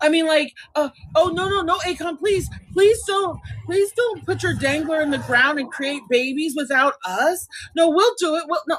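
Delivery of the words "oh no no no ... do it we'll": put-on frantic, desperate begging, repeated pleading. Mocking the idea that women would beg akon: mock begging. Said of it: "women are begging men for semen".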